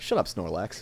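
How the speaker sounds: playful, mock-angry scolding tone, sounds really mad. Acting out a Pokemon nickname used when really mad: mock angry. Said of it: "when you're really mad".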